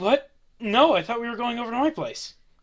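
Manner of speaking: very high-pitched, anxious, worried voice. Voicing a man answering an accusation of kidnapping, worried. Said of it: "He looks very worried".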